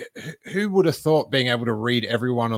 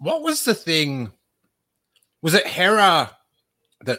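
pitched up, spoken around a mouthful of ice; 6 semitones higher than usual. Speaker who just had an icy drink, talking with ice in mouth. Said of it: "I just had an icy drink and now I've got ice in my mouth".

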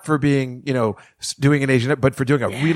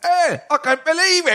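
put-on Scottish accent, pitched much higher. Speaker noting a character is actually Scottish, doing Cho Chang Scottish accent. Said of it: "is actually scottish so I guess she right. talks like".

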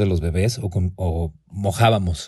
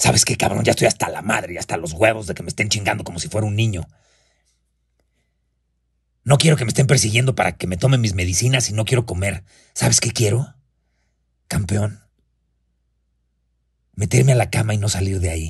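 put-on hoarse, raspy, rough, scratchy old man's voice; 2 semitones higher than usual. Retelling a phone call from a fed-up father: imitating father's hoarse, raspy voice. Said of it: "con esta voz ronca, rasposa e inconfundible".

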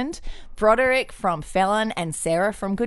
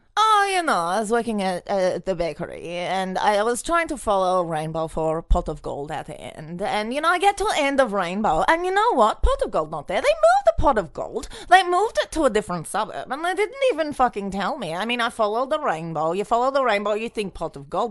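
swooping put-on Polish accent, leprechaun-like. Asked for a russian leprechaun, speaker improvises a story in a polish leprechaun accent. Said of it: "I'd rather do a Polish leprechaun".

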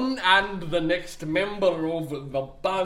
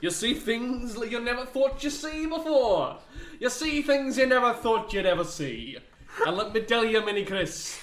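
fake Scottish accent, pitched higher; 5 semitones higher than usual. Speaking to Mini Chris among friends, in a put-on Scottish accent. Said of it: "why are you Scottish?".

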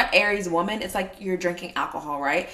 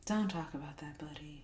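mock-mournful gloomy voice, dropping, much quieter; 2 semitones lower, 17 dB quieter than usual. Retelling what a man always says in his sad voice: imitating a lugubrious voice, dropping. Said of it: "It's so lugubrious".

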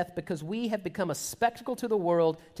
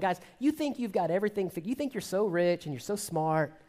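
acted sarcastic, mocking tone. Acting out a quoted speech to an audience, mock-sarcastic, mocking. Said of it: "he's sort of sarcastic and mocking him".

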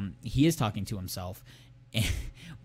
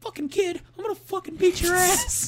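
very high-pitched, raised, squeaky voice; 5 dB louder than usual. Retelling what a man who approached said, in a very high-pitched voice. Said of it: "he had a very, very high-pitched voice when he was doing this".

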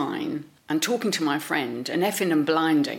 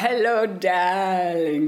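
mock forced speech through gritted teeth; 2 semitones higher than usual. Recalling how the club owner greeted her, retelling it through gritted teeth. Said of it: "through gritted teeth".

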